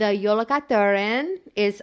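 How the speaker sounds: loud put-on Spanish accent. Starting to name a Christmas legend creature: Spanish accent. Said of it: "I don't know why I'm saying that with, like, a Spanish accent".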